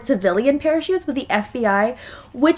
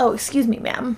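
acted, imitated whisper, slower. Retelling how a man got a flight attendant's attention, retelling a whisper. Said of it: "he whispered".

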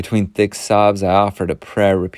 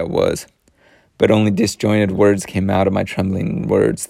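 ordinary delivery

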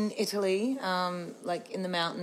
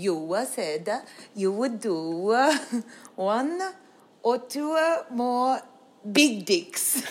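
put-on halting Italian accent, very slow; 4 semitones higher, 5 dB louder than usual. Retelling what the promoter answered on the drive home: slow Italian-accented English. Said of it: "very slow Italian English".

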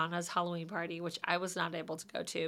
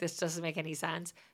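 ordinary talk

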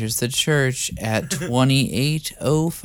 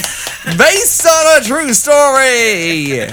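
mid-Atlantic accent, very high, very loud; 13 semitones higher, 9 dB louder than usual. Showing another performer how to say a tagline, in a mid-atlantic accent. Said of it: "Do it in a mid-Atlantic accent".

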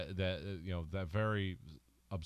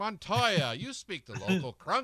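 put-on English accent, higher and louder; 11 semitones higher, 7 dB louder than usual. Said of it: "he should have done it in his English accent".

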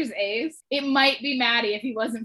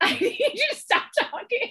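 high, helpless laughing through the words. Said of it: "I can't say it without laughing".

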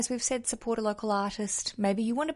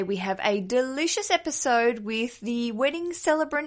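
plain

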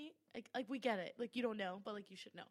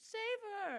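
very high, desperate, tearful crying plea; 10 semitones higher, 3 dB louder than usual. Retelling Elizabeth begging to save Mary: imitating Elizabeth crying out. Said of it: "And she's just crying".

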